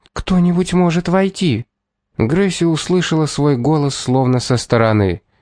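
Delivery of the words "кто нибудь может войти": timid, thin, high, fearful voice, almost a squeak. A maid, afraid of the man before her, asks in a thin, fearful near-squeak. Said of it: "Тонкий, боязливый, почти писк".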